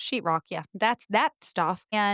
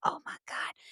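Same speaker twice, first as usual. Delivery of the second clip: quiet whisper. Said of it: "and I whisper because I".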